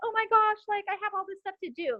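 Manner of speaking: stressed-out, panicked, high-pitched voice.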